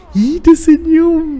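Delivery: put-on very high, slow, loud cooing baby talk.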